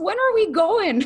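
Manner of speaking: put-on high little-girl voice with Scottish accent.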